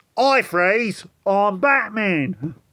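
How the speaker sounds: put-on Cockney accent.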